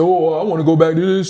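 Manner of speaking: put-on voice of a man speaking. Addressing a listener and quoting a hypothetical speaker, mimicking a man's voice. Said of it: "That's my male and my female voice".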